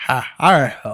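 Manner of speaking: put-on rambling elderly man voice. Imitating a politician stepping in to speak: Biden impression, rambling. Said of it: "Biden rambling".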